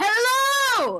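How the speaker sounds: very loud, very high, shrill, drawn-out cartoonish shout. Voicing a character who takes an exaggerated inhale first, shouting hello. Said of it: "she's gonna shout out".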